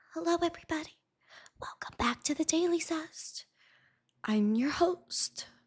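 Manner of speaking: very quiet, timid, nerdy, dull host voice. Host imagines opening the show as a nerdier self, in a shy voice. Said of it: "I could be all shy".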